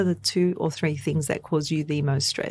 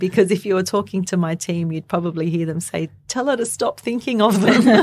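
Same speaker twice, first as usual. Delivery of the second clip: raised voice, suppressing a laugh mid-sentence; 5 dB louder than usual. Answering an interviewer's question about business ideas, holding back laughter. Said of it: "I'm trying to hold back my laughter here".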